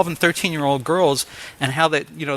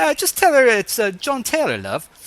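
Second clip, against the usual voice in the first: put-on lilting British accent, pitched up high; 7 semitones higher than usual. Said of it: "I do a great British accent".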